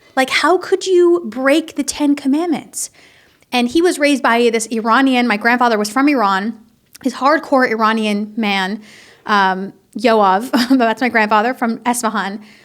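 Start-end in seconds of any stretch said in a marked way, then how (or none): 0.3-2.9 genuinely shocked, disbelieving tone. Recalling how their father reacted to yelling at mother, the speaker imitates genuine shock. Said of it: "he would be like genuinely shocked".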